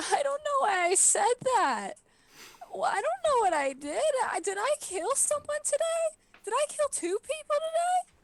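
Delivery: very high-pitched, hysterical sobbing and blubbering. Playing Magpie in a role-play scene, hysterical crying. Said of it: "Magpie is like hysterically crying".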